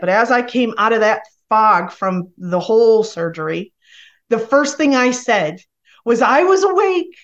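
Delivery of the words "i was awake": put-on tearful, hoarse crying outcry, very high-pitched. Retelling first words after waking from surgery: retelling a hoarse crying yell. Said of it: "I yelled it cryingly with a hoarse voice".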